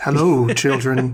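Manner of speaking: deep, stern put-on voice. Trying to lower the larynx so children take her seriously: lowered-larynx deep stern voice. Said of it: "trying to lower my larynx".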